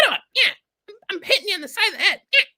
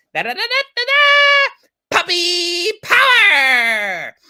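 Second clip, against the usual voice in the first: put-on cartoon puppy voice, louder; 2 semitones lower, 5 dB louder than usual. Asked for an impression, performing a Scrappy Doo voice. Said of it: "pretty good, uh, Scrappy Doo impression".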